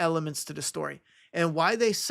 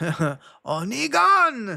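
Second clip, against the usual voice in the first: Croatian-accented speech; 4 semitones higher, 5 dB louder than usual. Asked to say a name in a Croat voice, the speaker does a Croatian accent. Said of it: "say Negan in Croat voice".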